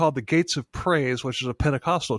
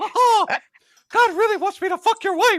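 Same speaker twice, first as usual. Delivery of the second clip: loud, very high cartoon squeak; 6 dB louder than usual. Redoing a quoted line from a scene for listeners, in a Mickey Mouse voice. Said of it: "more like Mickey".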